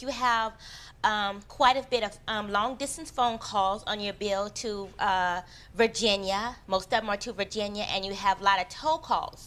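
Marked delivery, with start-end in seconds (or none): none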